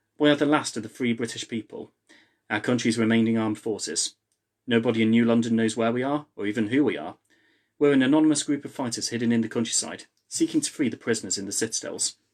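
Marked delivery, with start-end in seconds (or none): none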